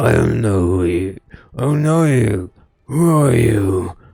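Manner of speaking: loud bark in a cracked voice. Voicing a bleary-eyed man who doesn't recognize the visitor: barking in a cracked voice. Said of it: "barks in a cracked voice".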